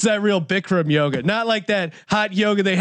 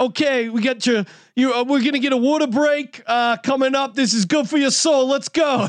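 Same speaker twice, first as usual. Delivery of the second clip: put-on Philadelphia accent, much higher; 6 semitones higher than usual. Imitating people in Bethlehem, Pennsylvania talking about hot yoga, in a Philly accent. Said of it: "hear people in Philly accents talk about hot yoga".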